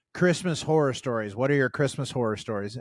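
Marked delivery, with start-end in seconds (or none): none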